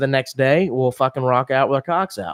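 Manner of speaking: ordinary talk, nothing marked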